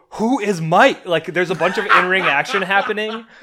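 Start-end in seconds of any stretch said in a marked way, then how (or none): 0.2-1.1 loud yelled line. Retelling how he interrupted Excalibur's call of a match, imitating Taz yelling. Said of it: "Taz just starts yelling".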